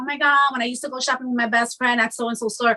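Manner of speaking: ordinary talk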